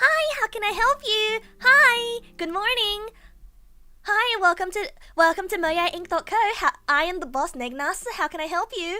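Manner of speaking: put-on customer service voice. Asked about their customer service voice, the speaker demonstrates it: customer service voice. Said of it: "Is it your customer service voice?".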